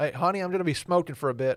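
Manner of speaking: put-on Southern accent, North Carolina style. Acting out a relative calling to a partner from the grill: put-on North Carolina accent. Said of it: "Is that your Texas accent?".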